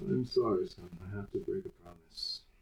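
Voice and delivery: very quiet, low, hushed muttering under the breath. Player voicing their character, speaking to the character's son: muttered under breath. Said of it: "I'll mutter under my breath as quietly as I can".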